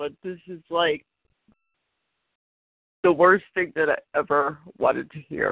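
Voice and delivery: speaking while crying, through tears. Talking about losing an animal and apologizing for crying, crying while talking. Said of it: "I'm sorry to be crying".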